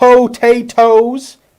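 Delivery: high-pitched, loud hobbit voice. Speaker quoting a film line about taters, Samwise Gamgee voice. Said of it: "I'm saying it like Samwise Gamgee".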